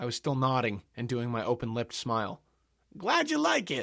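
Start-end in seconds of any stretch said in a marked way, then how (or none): 3.0-3.8 very high, said through a laugh. Robert answers the narrator, laughing. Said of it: "Robert laughed".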